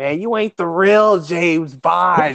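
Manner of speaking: put-on irritated, mad, grumbling tone. Retelling a man at a james bond movie, mad about the new bond: retelling a mad yell. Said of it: "He was mad about him".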